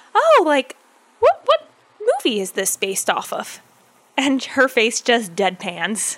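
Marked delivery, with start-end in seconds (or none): 0.1-3.6 innocent, naive, lilting voice, pitched up. Retelling a friend questioning a ride attendant, imitating him asking innocently. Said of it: "very like innocently just asks her".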